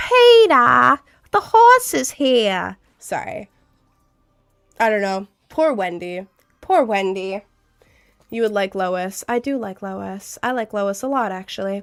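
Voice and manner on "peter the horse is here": loud, swooping voice with the name stretched out. Testing whether the put-on voice sounds like another character: Lois voice. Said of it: "does that sound like Lois?".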